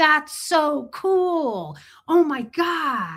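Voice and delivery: mock, very slow gushing excitement, drawn-out God. Retelling how staff reacted to a child's realization: imitating excited praise. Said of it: "they would be all excited for you".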